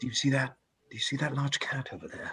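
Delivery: very quiet, hushed voice. Speaking as their character, the player quietly says to the others, in a hushed tone. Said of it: "quietly say to the others".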